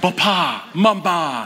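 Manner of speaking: high, mafioso-style voice. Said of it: "sounds like a guy in the mafia".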